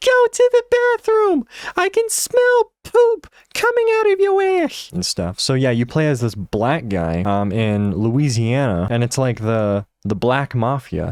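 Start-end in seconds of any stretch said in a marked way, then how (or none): 0.0-4.9 acted-out, very high, shrieking, screaming yell. Retelling a viral clip of a kid's mom behind him: imitating a mom screaming. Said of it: "his mom is just screaming at him".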